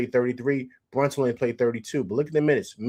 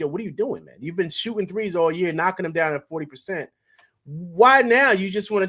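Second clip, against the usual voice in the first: put-on, screaming, ranting voice; 6 semitones higher than usual. Acting out a viewer watching the first quarter: imitating someone screaming at TV. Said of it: "screaming at the television".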